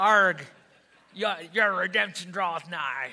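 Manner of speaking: stage pirate voice with a growled "arg". Reading a King James verse aloud, the speaker says it in a pirate voice. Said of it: "I should talk like a pirate when I say it".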